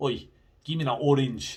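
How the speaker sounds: Scottish-accented speech. Demonstrating how people in scotland would say a line: scottish accent. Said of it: "In Scotland, they would say".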